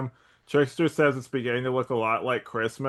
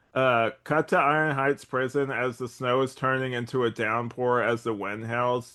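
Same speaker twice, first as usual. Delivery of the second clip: plain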